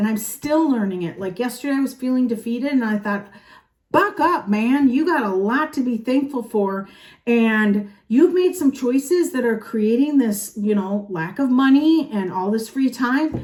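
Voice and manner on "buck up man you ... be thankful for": usual speaking voice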